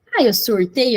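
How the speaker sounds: ordinary delivery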